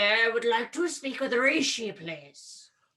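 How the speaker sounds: silly, comically overdone, deepened put-on voice. A player character who looks orcish walks up to the tavern bar: ridiculously deepened voice. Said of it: "I deepen my voice ridiculously".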